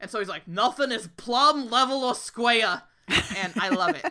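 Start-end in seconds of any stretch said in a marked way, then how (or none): 0.5-2.8 put-on loud, heavy, unmistakable Brooklyn accent. Imitate the brooklyn guy reading his own poem, in a very brooklyn accent. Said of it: "with a very Brooklyn accent".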